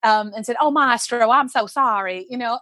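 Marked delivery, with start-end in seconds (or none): 0.6-2.2 slow, drawn-out southern drawl. Retelling a soprano's slip in rehearsal: Mary Jane Johnson's southern drawl. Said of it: "flipped into her southern, ... southern drawl".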